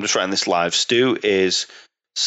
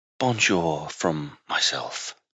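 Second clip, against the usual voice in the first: mock, low, seductive put-on sexy voice; 4 semitones lower, 6 dB quieter than usual. Saying goodbye at the end of the episode: put-on sexy voice. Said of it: "We've gone with that sexy voice again".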